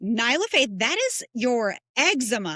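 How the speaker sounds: very loud, carrying public announcement voice. Retelling answering the child in a store: retelling saying it very loudly. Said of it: "very loudly, I say".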